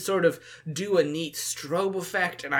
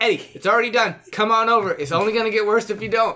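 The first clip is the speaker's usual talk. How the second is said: voice lifted a little, raised and pitched-up, urging; 6 semitones higher, 8 dB louder than usual. Calling out to eddie to come over, with a raised voice. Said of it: "I'm gonna raise my voice a little".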